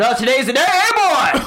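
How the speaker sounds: booming, high, jovial and friendly delivery. A game master voices Father Matthias greeting you with a shoulder clasp: booming Father Matthias voice. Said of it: "booming voice of Father Matthias".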